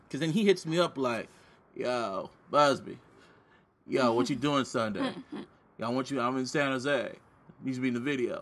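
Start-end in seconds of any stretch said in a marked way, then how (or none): 1.7-8.4 casual, easygoing, friendly buddy-like voice. Retelling a friend's phone message: impression of a friend. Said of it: "That's your impression of him?".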